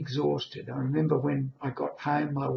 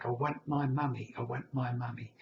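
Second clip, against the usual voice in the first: put-on crying baby voice, much quieter; 2 semitones lower, 7 dB quieter than usual. Recounting a moment with a nurse, the speaker retells crying in a baby voice. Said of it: "in a baby voice".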